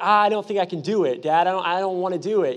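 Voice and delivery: ordinary talk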